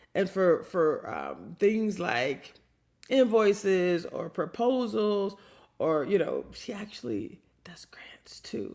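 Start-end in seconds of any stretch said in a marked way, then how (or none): 6.6-8.8 hushed, barely voiced whisper. Introducing Linda, the legal advisor who also does grants, whispering. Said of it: "I'm whispering it because".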